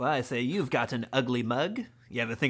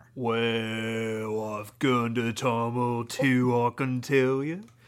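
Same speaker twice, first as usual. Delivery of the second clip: slow-talking, drawn-out British voice. Playing an imagined gurner answering a question, slow British-talker voice. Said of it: "he would talk slow like that".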